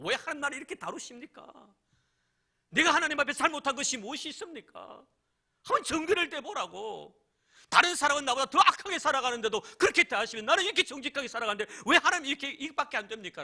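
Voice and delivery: high, loud, complaining shout. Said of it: "큰 소리 쳤을 거예요".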